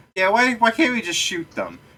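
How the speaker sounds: tiny, very high, swooping squeak. Acting out one of several voices heard in a group; small squeaky voice. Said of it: "Small squeaky voice going".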